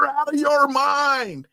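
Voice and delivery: very high, drawn-out put-on yell, "mind" stretched out. Retelling how another person yelled before leaving the green room: imitating someone yelling. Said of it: "And then he just yelled".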